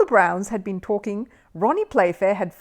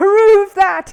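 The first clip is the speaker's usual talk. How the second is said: very high, very loud chortling laugh, repeated; 12 semitones higher, 10 dB louder than usual. Narrator reading a character repeating his own pun, in a high laughing voice. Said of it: "laughing at his own joke in a rather high voice".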